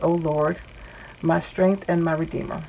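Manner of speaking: plain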